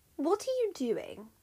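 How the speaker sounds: wary suspicious tone. Reading a wife questioning her husband, suspicious. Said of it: "Juno asked, suspiciously".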